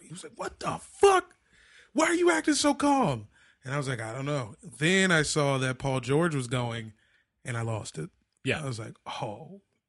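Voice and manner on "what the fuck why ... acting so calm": put-on frantic, freaked-out disbelief, very high, swooping pitch. Retelling how he reacted to being told calmly, retelling his freak-out. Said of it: "and he freaked out".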